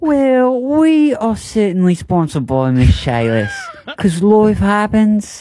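fake British accent drifting Australian. Rereading the sponsor message on request: put-on British accent. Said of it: "Do it in a British voice".

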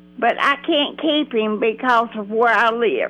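ordinary talk, nothing marked

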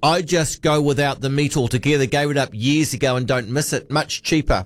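normal talking voice

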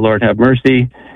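ordinary talk

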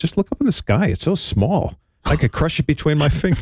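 patronizing, talking-down voice. Retelling what a girl said when asked why she thought that, imitating her condescension. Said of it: "She got all condescending and said".

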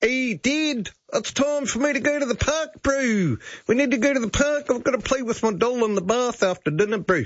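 chatty, youthful New Zealand accent. Imagining a child talking to their dad, in a new zealand accent. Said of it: "conversations with your child who has a New Zealand accent".

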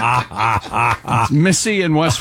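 slow, drawn-out speech while laughing.

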